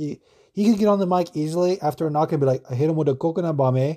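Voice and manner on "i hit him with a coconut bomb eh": really bad, put-on Hawaiian dialect accent. Imagining what he could say on the mic after a knockout, in a bad Hawaiian accent. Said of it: "that was a really bad Hawaiian dialect".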